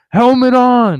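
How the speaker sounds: loud, insistent shouting, repeated. Retelling how a worker kept ordering the helmet back on: imitating someone yelling. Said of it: "he keeps yelling".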